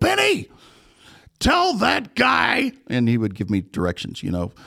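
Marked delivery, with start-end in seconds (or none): 0.0-2.7 put-on yelling, higher pitched. Retelling how the director yelled up at the booth: imitating a director yelling. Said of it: "he would yell up at the booth".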